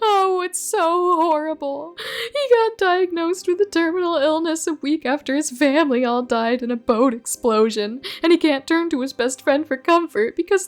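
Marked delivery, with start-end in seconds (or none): 0.0-2.0 tearful sobbing, much higher and slower. Asked why they are crying, a character explains, crying. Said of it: "why are you crying?".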